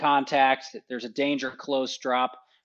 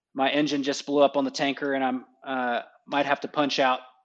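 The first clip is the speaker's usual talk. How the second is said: ordinary delivery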